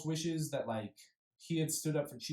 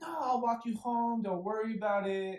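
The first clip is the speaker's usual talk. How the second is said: high, mock insincere, sugary fake-sweet voice; 6 semitones higher than usual. Retelling a woman offering to walk a drunk man home, imitating Mommy's fake sweetness. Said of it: "Mommy, all fake, is like".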